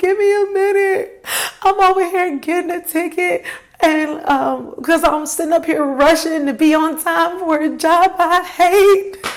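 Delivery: high, tearful voice, talking through tears. Retelling how she answered an officer waiting for her to sign a ticket: retelling her own crying. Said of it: "And I was just crying".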